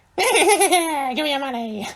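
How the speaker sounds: clown voice like a witch. Asked what a clown sounds like, demanding money: clown voice that sounds like a witch. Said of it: "That's a witch".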